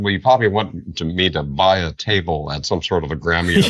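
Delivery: normal talking voice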